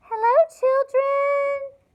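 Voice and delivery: sugary, sweet, very high-pitched voice. Narrating someone greeting the discouraged children: sweet voice. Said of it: "someone said in a sweet voice".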